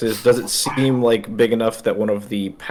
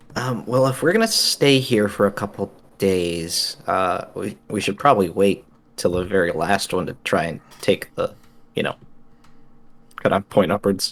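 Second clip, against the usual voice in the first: quiet, lowered, hushed voice; 3 semitones lower than usual. In a role-play, a player speaks in character to the rest of the party, in a lowered voice. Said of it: "I will like lower my voice to the rest of the party".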